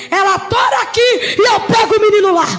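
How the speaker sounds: loud, yelling demon voice. Retelling what a demon shouted during prayer: imitating a demon shouting. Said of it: "Eu ouvi esse demônio gritando".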